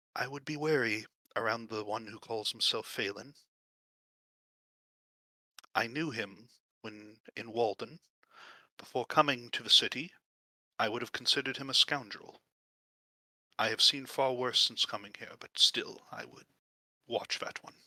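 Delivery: whispering. Narrator voicing a woman who leans in to speak to Alina, whispering. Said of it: "she leans in and whispers to Alina".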